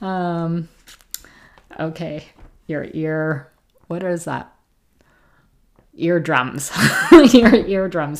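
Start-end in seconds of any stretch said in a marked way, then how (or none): 7.3-8.2 much louder, laughing through the words. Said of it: "Sorry for laughing loud".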